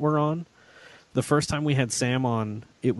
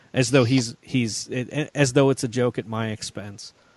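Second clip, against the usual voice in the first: usual speaking voice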